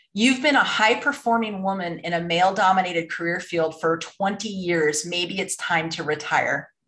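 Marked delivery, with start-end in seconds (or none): none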